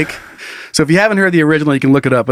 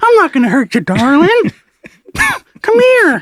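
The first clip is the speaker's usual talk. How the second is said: creepy put-on parrot voice, higher. Quoting what the creepy parrot says: imitating a creepy parrot. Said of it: "my kids say it, I still say it, like".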